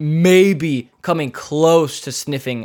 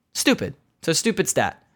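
agitated, passionate, upset, worked-up ranting outburst; 4 dB quieter than usual. Ranting about goalie save stats being meaningless: upset and worked up. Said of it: "Sorry, I'm upset".

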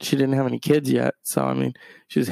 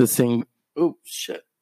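ordinary delivery

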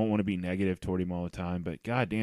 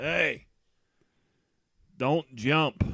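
put-on loud, pitched-up yell; 7 semitones higher, 5 dB louder than usual. Telling a story from a game, the speaker quotes a fan a section over: retelling a yell.

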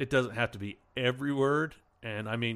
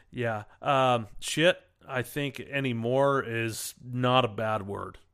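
usual speaking voice

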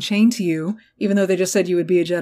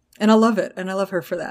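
ordinary delivery

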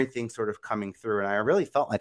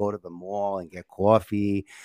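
Staten Island New York accent. Recalling childhood, the speaker demonstrates talking with a thick Staten Island accent. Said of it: "I had this really thick Staten Island accent".

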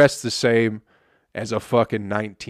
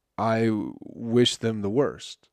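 usual speaking voice

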